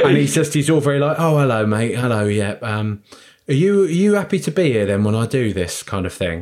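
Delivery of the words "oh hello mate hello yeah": put-on East End thug voice. Retelling a helpline sending Alan Ford round to a house: Alan Ford East End voice. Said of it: "send round an East End thug".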